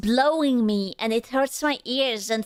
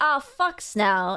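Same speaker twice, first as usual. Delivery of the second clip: ordinary talk, nothing marked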